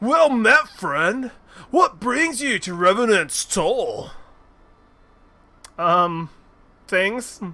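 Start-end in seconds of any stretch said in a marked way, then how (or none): 0.0-4.1 pitched-up put-on surfer dude voice. Voicing a game character who greets the player: surfer dude voice. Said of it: "like a "Kill Surfer dude, yo."".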